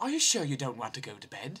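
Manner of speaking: put-on British-sounding, English-accented robotic machine voice. Recalling a floating robot, voicing it as a robot with English accent. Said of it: "this fucking robot with an English accent going".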